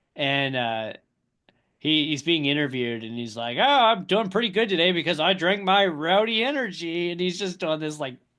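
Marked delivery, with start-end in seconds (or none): 3.6-7.2 put-on obnoxious sales pitch voice, higher and louder. Retelling a driver's interview plugging an energy drink: imitating Kyle Busch obnoxiously promoting. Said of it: "very blatantly just being obnoxious".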